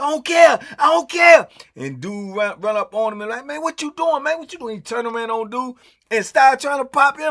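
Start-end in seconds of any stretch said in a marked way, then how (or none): 0.0-1.5 mock screaming, much higher, louder, slower. Retelling a fight story, acting out the attacker's words: imitating someone screaming. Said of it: "he hollering and screaming like".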